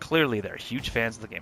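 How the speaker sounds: ordinary delivery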